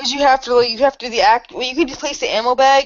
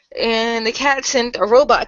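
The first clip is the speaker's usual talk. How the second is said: ordinary talk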